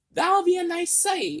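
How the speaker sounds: very high-pitched put-on voice. Retelling how he repeated the line out loud, in a high-pitched voice. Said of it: "in a high pitched voice".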